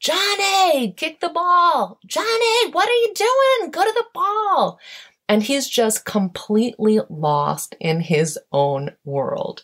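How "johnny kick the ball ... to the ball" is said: play-acted, very high screaming. Retelling a kids' game, imitating the coach and parents screaming at a young player. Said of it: "his coach and his parents screaming at him".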